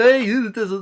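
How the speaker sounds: horrible, badly done put-on rural Appalachian accent. Describing an actor playing a bank robber, the speaker is imitating Brendan Gleeson's hillbilly voice. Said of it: "like a hillbilly type of voice".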